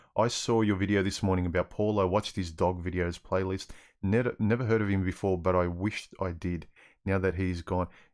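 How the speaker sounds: usual speaking voice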